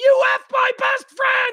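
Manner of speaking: put-on shrill, very high scream. Retelling how a son reacted at a party: imitating a son screaming. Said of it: "the son is screaming".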